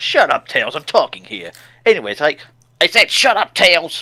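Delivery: put-on fed-up angry snapping, pitch climbing. Retelling how Sonic snaps at Tails who keeps repeating: imitating Sonic snapping angrily. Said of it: "Sonic just eventually snaps and goes".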